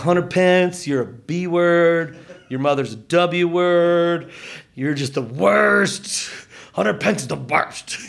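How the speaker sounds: put-on drunken, taunting, heckling jeer. Recalling shouting at a baseball player all game: retelling his drunken heckling shout. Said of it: "just shouting at him the whole game".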